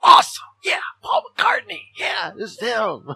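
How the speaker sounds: play-acted shrill, booming, very high overexcited gushing. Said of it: "way too excited".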